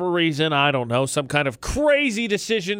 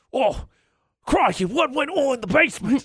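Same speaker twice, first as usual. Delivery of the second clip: high, pitched-up, exclaiming voice; 7 semitones higher than usual. Suggesting what to think when scared: Steve Irwin voice. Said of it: "just channel your Steve Irwin".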